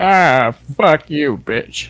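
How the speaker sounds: cartoonish villain voice. Doing impressions for the show, speaking in a Plankton voice. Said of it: "That's Plankton".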